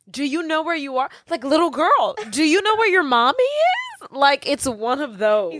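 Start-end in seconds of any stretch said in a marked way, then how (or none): 0.1-4.0 mock, most genuine caring concern, pitched up. A speaker acts out a character asking someone if they're lost, imitating genuine concern. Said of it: "says it with the most genuine concern".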